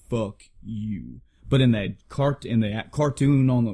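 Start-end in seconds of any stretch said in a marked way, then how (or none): 0.1-1.2 acted solemn, heavy-hearted, somber, grave delivery. Retelling how Vegeta delivered the line in the original: somber delivery. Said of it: "It was a very somber".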